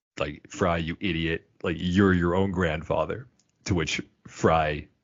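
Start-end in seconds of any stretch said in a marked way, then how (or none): none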